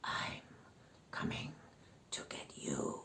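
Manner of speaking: menacing monster voice, hissed and whispered. Narrator reading a story, voicing the monster hiding behind a rock: hissing monster voice. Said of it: "it hissed".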